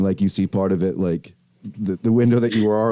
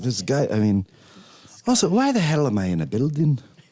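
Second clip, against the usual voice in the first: put-on Irish-accented bird voice; 3 semitones higher than usual. Voicing a bird that has turned Irish, in an Irish accent. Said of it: "The bird's Irish now".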